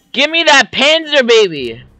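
high-pitched yelling. Speaker yells a line the neighbors hear all day, screaming. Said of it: "They just hear me all day screaming".

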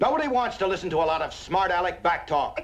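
very high, heated, angry screaming. Arguing with someone who keeps talking back: screaming in an argument. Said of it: "Can't you just tell me about it without screaming at each other?".

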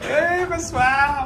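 called out voice.

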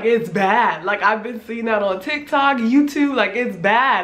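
ordinary talk, nothing marked

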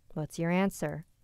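plain

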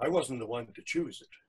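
plain reading voice

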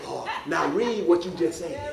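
hushed whisper. Speaker addresses loud boasters, acting out a reply to them, whispering. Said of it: "I'm going to whisper to you and say".

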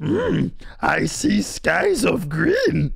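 very slow, drawn-out, creaky voice. Imitating how a voice in a clip sounds: Yoda voice. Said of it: "too much like Yoda".

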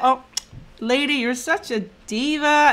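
slow, drawn-out, admiring diva tone, acted out. Showing how diva is said as praise: imitating a complimentary diva remark. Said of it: "I say it in a compliment way".

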